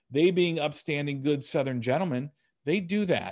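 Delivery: ordinary delivery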